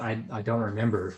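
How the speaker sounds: ordinary delivery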